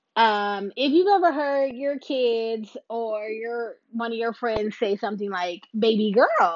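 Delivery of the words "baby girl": loud, called-out delivery. Quoting a celebrity's catchphrase as fans say it: B Simone catchphrase voice. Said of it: "that's B Simone".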